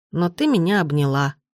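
plain

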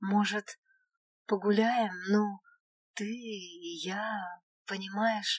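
shy, nervous, timid, soft and slow. Reading a story: Miraël speaks up to his companion, timid and nervous. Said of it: "Робко начал Мираэль, нервно накручивая".

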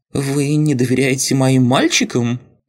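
wounded, offended tone, pitched very high. Read the line of an abbot questioning a magister who wants everyone in one place, offended. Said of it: "обиженно спросил настоятель".

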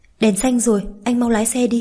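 ordinary delivery

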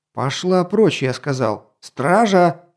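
called out, irritated, fed up and impatient. A duke orders a woman out of his bedroom and calls the guards: impatient bellow. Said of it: "нетерпеливо заорал герцог".

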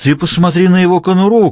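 high-pitched, yelled shout. Arriving at Morgan's house, Duffy calls to someone in Olga's car, shouting. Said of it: "крикнул Даффи".

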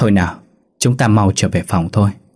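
plain reading voice

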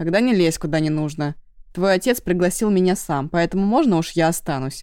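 ordinary delivery

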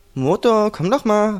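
loving, romantic, high-pitched, slow call. Narrator reads a girl calling him over, calling romantically. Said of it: "rief Sira auf einer romantischen Art und Weise".

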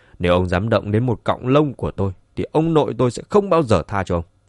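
ordinary talk

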